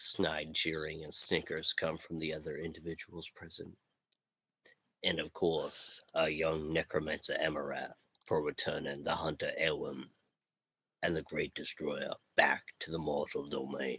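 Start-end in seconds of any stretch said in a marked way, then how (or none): 5.0-14.0 put-on low Southern-accented voice.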